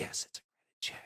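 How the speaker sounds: hushed voice. Retelling what the guy on the phone finally admitted: imitating a lowered whisper. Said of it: "lowered his voice as if he was whispering".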